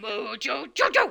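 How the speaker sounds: signature cartoon monkey call voice. Showing how a cartoon character says his own name: Mojo Jojo voice. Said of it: "he says his name a very specific way".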